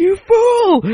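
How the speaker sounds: shrill, very loud, high crowd-style shout. Describing a quiz show, the speaker imitates the audience shouting at a wrong answer. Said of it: "the audience starts shouting".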